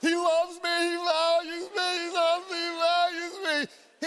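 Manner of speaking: put-on high, blubbering, snotty sob-talk through tears. Retelling their reaction to his speech about them, acting out ugly crying. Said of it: "I'm ugly crying".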